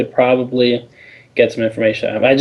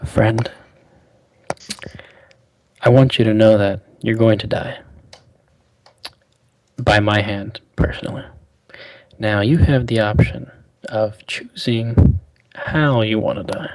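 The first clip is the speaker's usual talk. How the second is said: hushed, quiet whisper; 2 semitones lower than usual. Leaning close to a weak, barely conscious man, whispering in his ear. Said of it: "whisper in his ear".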